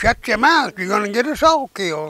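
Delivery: acted high-pitched yell. Retelling pulling a comrade across a river: retelling a yell. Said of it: "I was yelling at him".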